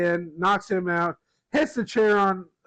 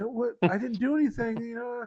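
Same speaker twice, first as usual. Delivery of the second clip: soft, high, begging, pleading voice; 5 semitones higher, 6 dB quieter than usual. Retell a man's answer to an accusation of betrayal, imitating someone begging. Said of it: "Heyman kind of like is like begging".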